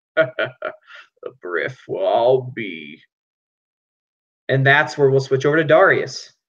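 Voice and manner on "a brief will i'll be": rugged, deep-voiced, very slow and drawn out. Narrating a scene, the storyteller voices someone entering behind the hero: deep, rugged voice. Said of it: "a deep, rugged voice".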